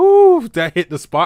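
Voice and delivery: high, loud, smug and satisfied mock voice. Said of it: "goes like".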